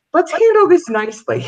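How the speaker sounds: mock polite voice with laughter.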